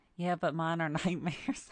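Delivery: laughing through the words. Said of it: "I'm sorry that I'm laughing so much".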